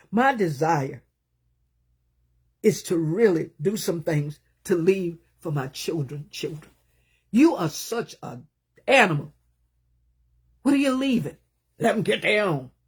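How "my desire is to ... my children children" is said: choked-up voice, on the verge of crying. A parent speaking about leaving something for their children, on the verge of tears. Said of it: "I'm about to cry".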